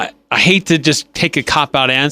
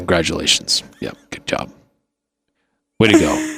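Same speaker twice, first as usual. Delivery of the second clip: breathy, near-whispered delivery; 8 semitones lower, 4 dB quieter than usual. Imitating Bill Belichick addressing players after a game: Bill Belichick impression. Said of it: "This is Bill Belichick".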